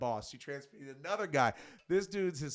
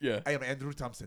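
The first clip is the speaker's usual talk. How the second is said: ordinary talk, nothing marked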